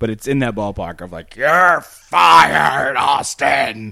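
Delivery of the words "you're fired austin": loud, rough bellow, fired stretched out. Showing how a wrestling authority figure talks: Vince McMahon impression. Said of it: "he sort of talks like this".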